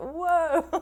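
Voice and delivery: high-pitched exclamation broken with laughter. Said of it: "I was like".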